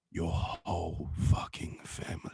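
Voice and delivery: slow, breathy, stretched-out whisper. Showing the others a Jason Statham impression. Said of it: "My Jason Statham voice".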